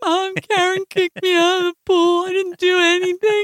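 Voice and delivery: play-acted, weepy crying child voice, very high. Telling a story about the pool, act out the complaint to your mom, imitating Billy crying. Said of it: "goes to my mother's house crying".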